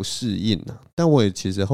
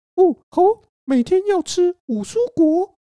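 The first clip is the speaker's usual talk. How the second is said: high, loud squeaking voice; 6 dB louder than usual. Retelling trying the voice someone suggested, speaking in a Mickey Mouse voice. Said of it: "你就用米老鼠的声音".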